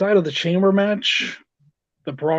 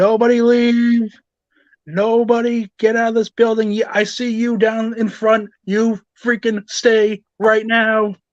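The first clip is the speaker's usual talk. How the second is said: high, loud, commanding mock announcer bark. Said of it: "Mister McMahon coming out and saying".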